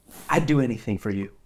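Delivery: tender, gentle voice. An inanimate object speaking to the listener, in a very tender tone. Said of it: "with sort of a very tender look and tone".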